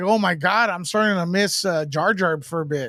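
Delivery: ordinary talk, nothing marked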